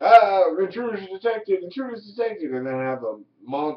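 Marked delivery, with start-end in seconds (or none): 0.6-2.5 high, nerdy computer announcer voice. Describing a chess-piece character's voices, showing its nerdy computer voice. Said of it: "a nerdy voice that's like a computer going like".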